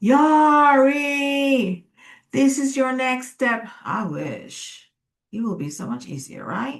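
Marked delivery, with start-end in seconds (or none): 0.0-3.7 booming, loud, pitched-up voice, one word drawn out. Speaker imagining intuition speaking during meditation, in a booming voice. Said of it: "with a booming voice saying".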